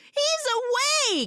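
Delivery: very high, loud, drawn-out scream. Retelling a movie scene where the girl calls out: imitating someone yelling. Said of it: "she yells and screams".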